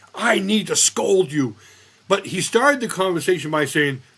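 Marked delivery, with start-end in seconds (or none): 0.2-1.6 put-on Filipino accent. Retelling how Dr. Lim started the conversation, imitating Dr. Lim in an odd accent. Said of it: "I don't know why I made an accent like that".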